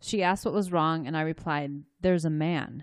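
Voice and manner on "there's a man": very flat monotone voice. Retelling a child's eerie words to a mother: flat monotone voice. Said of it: "in a very monotone voice".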